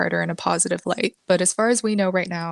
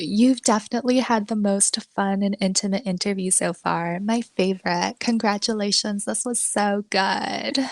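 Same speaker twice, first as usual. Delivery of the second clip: fake, put-on baby voice. Retelling how Paris ended an interview: Paris Hilton fake baby voice. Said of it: "She switches into her fake voice and says".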